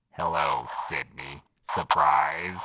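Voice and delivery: masked voice run through a voice changer. Trying out a voice changer they were given, in a Ghostface voice-changer voice. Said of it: "They gave us a voice changer".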